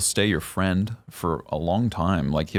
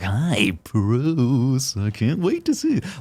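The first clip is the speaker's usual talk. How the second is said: creepy, high, drawn-out, slow, swooping sing-song; 5 semitones higher than usual. Showing how the Joker voice should not sound: too creepy Joker voice. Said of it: "it can't be too creepy".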